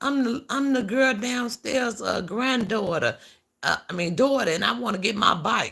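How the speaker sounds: put-on very high, loud elderly woman's voice. Speaker retells what the person who rang the bell said, imitating an old lady's voice. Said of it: "she sounded like an old ass lady".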